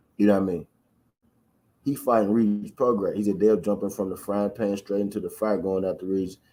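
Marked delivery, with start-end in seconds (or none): none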